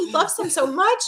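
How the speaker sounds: put-on very high, weepy, tearful pleading little child voice. Retelling a daughter's reaction to a sad movie: imitating a crying child. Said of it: "she's just crying in my lap".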